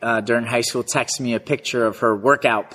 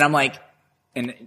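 ordinary delivery

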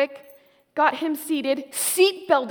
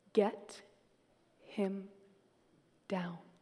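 put-on ultra-calm voice, very low and very hushed; 7 semitones lower, 14 dB quieter than usual. Recalling Mom coming down the porch stairs, imitating Mom's ultra-calm voice. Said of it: "She says in her ultra-calm voice".

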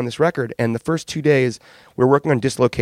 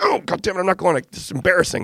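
furious, angry cursing with raised pitch; 6 semitones higher than usual. Retelling a band member refusing to leave: imitating someone furious. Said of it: "He's furious".

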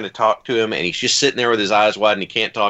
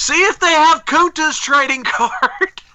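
very high, loud shouted voice; 4 dB louder than usual. Retelling a shouted reply across a convention hall: imitating someone shouting back. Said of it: "LeVar Burton shouts back".

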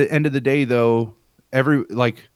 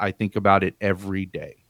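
mock, flat, deadpan delivery; 4 semitones lower, 4 dB quieter than usual. Retelling how a former supervisor answered a question, imitating a deadpan reply. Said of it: "like deadpan".

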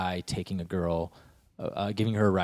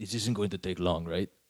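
put-on German accent. Speaker quotes a guy at a car commercial turning to the cameraman: German accent. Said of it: "And that was my German accent".

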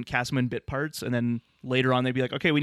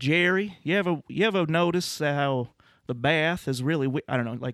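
put-on drawling southern accent; 3 semitones higher than usual. Quoting an actress's girlfriend character addressing jerry in an episode, in a southern drawl. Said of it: "she has kind of a southern drawl".

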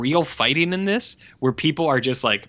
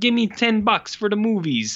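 put-on pitched-up, forty-five-year-old Italian man character voice; 8 semitones higher than usual. Retelling a brother talking to his sister, 45-year-old Italian man impression. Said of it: "he's suddenly like a 45 year old Italian man".

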